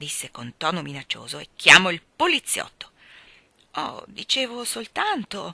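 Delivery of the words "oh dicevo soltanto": meek, timid, docile voice, higher. A boy answers a threatening woman, meekly. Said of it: "cominciò Michael docilmente".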